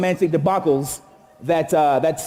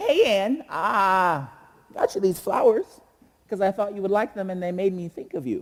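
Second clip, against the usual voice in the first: squeaky, little, younger-sounding voice; 3 semitones higher, 4 dB quieter than usual. Acting out his shorter, skinnier self giving flowers, squeaky younger-self voice. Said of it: "squeaky voice".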